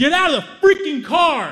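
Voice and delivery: very high, very loud, enraged furious yell. Retelling how an angry guy yelled at them: imitating an angry shout. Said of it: "and he's pissed".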